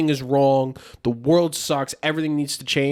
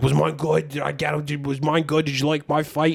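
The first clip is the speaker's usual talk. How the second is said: put-on eager, dim-witted, mocking young voice. Mocking a younger player asking about his fight: mocking imitation of a younger player. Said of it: "the fucking dickhead younger one comes skating over".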